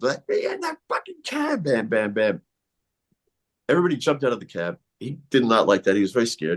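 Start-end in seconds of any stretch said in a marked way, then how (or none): 0.0-1.6 mock very high, swooping screaming. Retelling climbing on a cab and yelling at the driver: imitating someone screaming. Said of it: "screaming at him".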